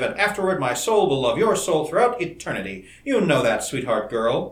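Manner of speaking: plain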